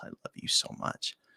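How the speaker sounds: put-on quiet voice. Retelling saying it to her across a table: retelling quiet words. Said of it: "I was saying it, like, really just quietly".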